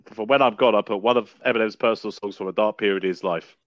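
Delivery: ordinary delivery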